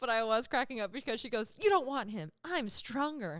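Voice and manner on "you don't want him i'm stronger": heartfelt, earnest, impassioned delivery, laid on thick. Retelling a woman's plea to the creeper to take her instead, mock-impassioned plea. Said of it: "she has this impassioned speech".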